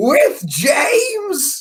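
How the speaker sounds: mock very high, shrill, upset, swooping yell. Retelling a child yelling at the girls: imitating someone yelling. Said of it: "And he yells".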